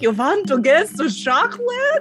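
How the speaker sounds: loud, swooping, big cartoon vampire accent. Showing how badly your own attempt would end up going, in a Count Chocula voice. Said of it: "It'll end up going like Count Chocula".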